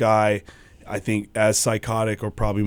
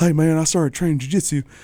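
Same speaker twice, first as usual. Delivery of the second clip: put-on country accent, pitched higher; 7 semitones higher than usual. Speaker quotes a friend from skateboarding, doing Boo's country accent. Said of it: "in his country accent".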